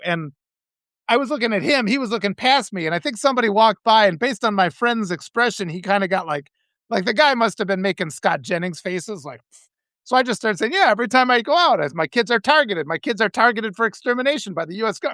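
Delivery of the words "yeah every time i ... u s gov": plain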